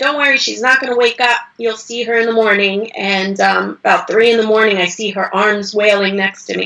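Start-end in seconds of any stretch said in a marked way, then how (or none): none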